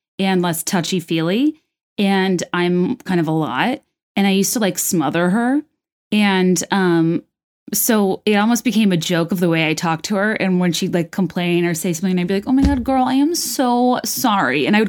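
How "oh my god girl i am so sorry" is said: put-on ditzy, drawn-out, swooping valley girl voice. Retelling how she teased a friend who complained, the speaker uses a dumb valley girl voice. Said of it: "talk to her in a way that was like valley girl stupid".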